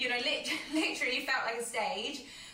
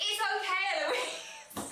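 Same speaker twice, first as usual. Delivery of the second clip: play-acted, high-pitched shout; 7 semitones higher than usual. Retelling a gran calling out from the crowd: imitating someone shouting. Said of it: "shouting from the crowd".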